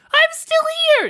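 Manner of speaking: very high, squeaky little mouse voice. Interrupting a rules explanation as a character who comes back: weird mouse voice. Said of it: "that weird mouse voice".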